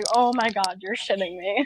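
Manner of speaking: words pushed out through hard laughter. Voicing a character who hears they are in the Barbie dimension: laughing really hard while talking. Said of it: "Isaiah just laughs really hard and he's like".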